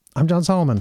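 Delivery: rattled off in a hurry, rushed and too fast. Introducing oneself at the end of an episode: said too fast. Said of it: "I said that too fast".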